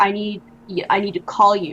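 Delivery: ordinary delivery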